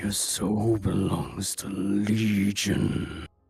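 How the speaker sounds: loud, booming, demon-possessed voice. Asked to give a demon voice, the speaker delivers one: demon voice. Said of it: "could you uh give us a demon voice?".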